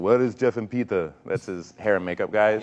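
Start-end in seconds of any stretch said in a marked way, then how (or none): 0.0-1.1 put-on movie-star voice, talking around a cigar. Retelling meeting Arnold Schwarzenegger on a film set: Arnold Schwarzenegger impression. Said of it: "he had his cigar in his, in his mouth and he goes".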